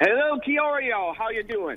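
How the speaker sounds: southern drawl with twang. A co-host greets the studio by phone from New Zealand, in a southern drawl. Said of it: "You're doing that southern drawl again".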